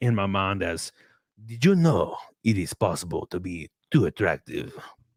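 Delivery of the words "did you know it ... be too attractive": suave Spanish-accented horse character voice. Showing how a horse talks in their imagination, in a Puss in Boots voice. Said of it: "I feel like all horses sound like that".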